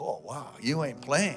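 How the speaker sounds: put-on Hawaiian intonation. Retelling what a church man said after the service: imitating Paul, Hawaiian intonation. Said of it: "Hawaiian intonation".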